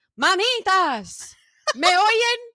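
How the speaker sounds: very high, very loud, projected recorded-message blare. Retelling a stranger calling out to her, imitating a loud projected voice. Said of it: "she projected her voice like a fucking automated like message".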